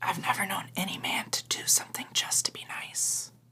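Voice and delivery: soft whisper, up close. A character, close together with another character and holding her face, whispering. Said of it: "I'm gonna whisper and just say".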